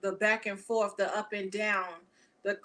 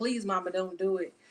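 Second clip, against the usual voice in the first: acted begging, pleading voice. Imagining someone begging their mother, imitating someone begging. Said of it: "begging and pleading like".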